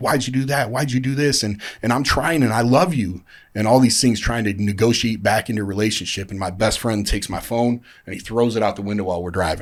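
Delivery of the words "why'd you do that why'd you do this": put-on heated, demanding, pitched-up yelling. Retelling a phone call where he yelled at her: retelling own yelling. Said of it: "Yelling at her".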